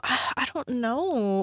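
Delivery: said on an outbreath sigh, dropping off. Talking about a person they don't plan to befriend, sighing.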